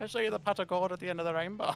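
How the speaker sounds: put-on Irish accent. Joking with another speaker, doing an Irish accent. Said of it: "I just do the Irish accent".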